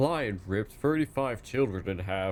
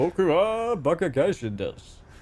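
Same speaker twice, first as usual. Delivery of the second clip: announcer-style delivery, higher and louder; 8 semitones higher, 6 dB louder than usual. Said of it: "You sound like a T V presenter".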